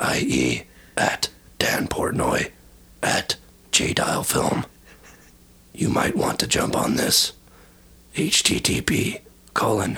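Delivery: very slow, whispered delivery.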